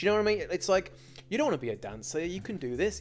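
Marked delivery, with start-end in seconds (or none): none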